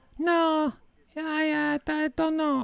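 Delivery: put-on very high Spanish accent, broken English. Repeating phone answers given to callers, in a Spanish woman's voice with broken English. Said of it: "a Spanish woman's voice that has broken English".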